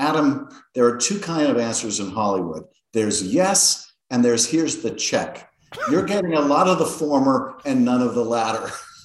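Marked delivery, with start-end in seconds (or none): none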